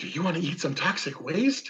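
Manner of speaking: really excited, animated, loud, sing-song gushing delivery. Showing how you'd talk to a dog, in a really excited tone. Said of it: "and you get really excited".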